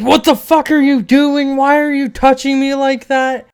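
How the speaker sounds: shrill, loud screaming. Retelling what a girl screamed at him after he hit her; retelling a scream. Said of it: "And she screamed at me".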